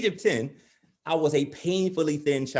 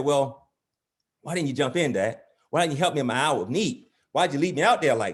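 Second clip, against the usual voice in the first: ordinary talk, nothing marked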